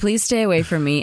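normal talking voice

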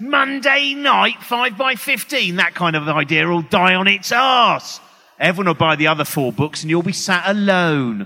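scornful, contemptuous voice. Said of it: "a third voice going".

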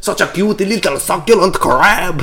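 put-on French accent. Joking with a co-speaker, the speaker puts on a stereotypical French accent. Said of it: "my French accent is an American person".

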